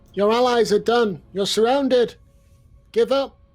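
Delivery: booming, very loud, high-pitched intimidating shout. Calling out in character for a surrounded foe to give up: shouting at an enemy. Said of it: "I'm gonna shout out to him".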